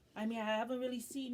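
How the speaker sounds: normal talking voice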